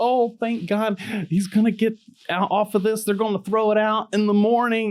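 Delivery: very high, excited, gushing voice.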